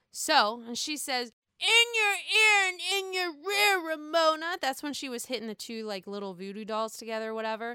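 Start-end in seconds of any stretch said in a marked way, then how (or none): 1.6-4.6 put-on acted drunken taunt, raised and pitched up. Quoting a very drunk Sonja's line to Ramona: imitating drunk Sonja. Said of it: "Sonia is saying it while she is super, super sloshed".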